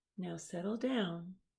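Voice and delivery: sweet, teacherly voice. Narrator reading the teacher's line to a misbehaving class, in a sweet voice. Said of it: "said Miss Nelson in her sweet voice".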